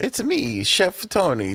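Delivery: bad cartoon voice, very high, swooping, slow, sing-song. Joking about a cookware salesman, posing as him: bad Mario voice. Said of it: "Don't you hear the bad Mario voice".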